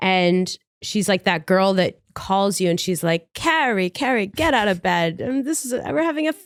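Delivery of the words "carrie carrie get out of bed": put-on laid-on, high-pitched New York accent. Imitating the girl who phones you to get you up, in a new york accent. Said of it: "She has a New York accent".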